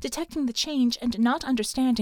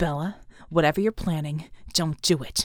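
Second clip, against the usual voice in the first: harsh, low voice; 7 semitones lower than usual. A voice in a woman's inner ear, urging her to stop, said harshly. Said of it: "Red Genie's voice said harshly".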